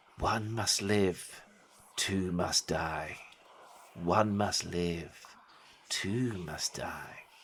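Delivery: creepy whispering. Voicing hooded figures around a sacrificial stone: whispering cultists. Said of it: "And they start to whisper".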